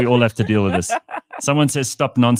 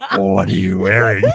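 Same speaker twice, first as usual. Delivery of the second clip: acted creepy voice, raised volume; 5 dB louder than usual. Showing how to answer a sales caller: put-on creepy voice. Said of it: "Stop being a creep".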